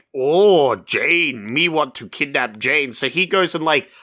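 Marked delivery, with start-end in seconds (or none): 0.2-3.0 slow, simple, broken jungle-man style talk. Retelling a movie scene where Tarzan meets a lion: imitating Tarzan. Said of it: "And then he's like".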